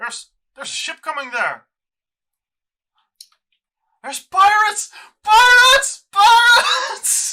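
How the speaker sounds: calling out loudly. The fisherman at the back of the ship calls out a warning. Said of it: "you hear him call".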